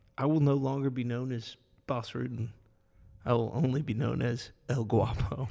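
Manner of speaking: ordinary talk, nothing marked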